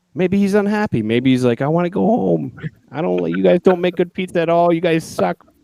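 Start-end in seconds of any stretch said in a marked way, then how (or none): 1.6-5.3 put-on, really thick, heavy New Jersey accent. Act out what an unhappy man in Calgary might say, in a really thick Jersey accent. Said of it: "really thick, like Jersey accent".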